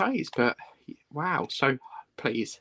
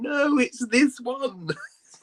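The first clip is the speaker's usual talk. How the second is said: acted very high, drawn-out scream; 10 semitones higher than usual. Imagining a viewer shouting at the TV: imitating Kathy screaming. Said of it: "she's probably screaming at the T V".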